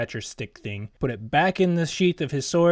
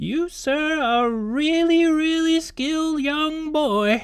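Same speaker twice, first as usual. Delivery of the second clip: very high, slow put-on old lady voice; 13 semitones higher than usual. Telling a story, a grinning old woman hobbles up to him: old granny voice. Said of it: "she says in her old granny voice".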